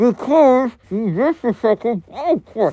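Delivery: put-on mumbling. Retelling a kid talking with teeth sunk into an arm: imitating mumbling.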